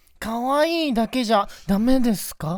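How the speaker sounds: cutesy slightly nasal voice. Doing a penalty game on a three-two-one count, cutesy, slightly nasal voice. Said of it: "このちょっと鼻にかかった感じね。あすごい[name]がぶりっこしてる今。".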